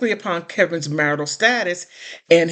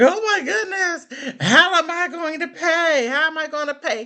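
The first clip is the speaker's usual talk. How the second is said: mock screaming, very high, shrill, pitched way up; 11 semitones higher than usual. Mocking the ex-husband over losing his payments: imitating someone screaming. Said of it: "he's screaming".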